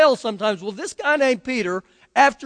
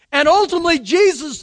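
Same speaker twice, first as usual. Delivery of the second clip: plain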